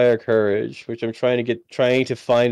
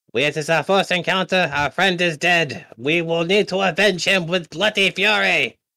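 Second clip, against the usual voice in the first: put-on, French-ish accent; 7 semitones higher than usual. Player rallying allies in character after their friend's death, French-ish put-on accent. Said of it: "I can't tell if he's doing a French accent or a Franco-Chinese accent".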